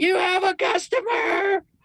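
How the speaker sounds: very high-pitched, shrill calling out. Daughter calling to her father in the back about a customer, yelling. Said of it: "she yells".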